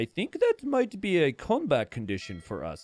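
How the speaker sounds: relaxed, easygoing delivery with calm swooping tone. Speaker contrasts their own screaming with Dark's reply: imitating Dark's relaxed calm. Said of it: "so relaxed".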